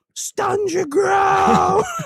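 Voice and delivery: put-on very high-pitched, loud scream. Retelling how his dad screamed in front of a football crowd, imitating someone screaming. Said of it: "and he's screaming".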